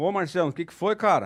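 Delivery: ordinary delivery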